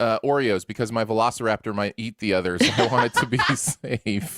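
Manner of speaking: plain reading voice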